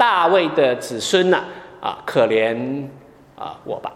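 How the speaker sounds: ordinary delivery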